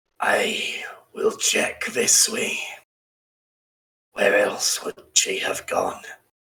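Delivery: croaky voice, sort of Scottish brogue. A storyteller voices an unseen dwarf searching nearby, in a croaky Scottish brogue. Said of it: "a croaky voice. Definitely Eastern Ridge, sort of Scottish brogue".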